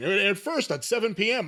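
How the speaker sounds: voice cracking and breaking mid-line. Explaining when a wrestling show aired, voice cracking. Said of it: "I don't know why my voice cracked".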